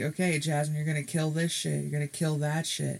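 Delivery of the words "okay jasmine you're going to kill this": ordinary delivery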